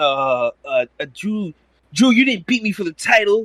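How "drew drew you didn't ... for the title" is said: squeaky, very high-pitched mocking caricature voice. Answering a request to do the Bobby Lashley impression: Bobby Lashley impression. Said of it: "what was your Bobby Lashley impression again?".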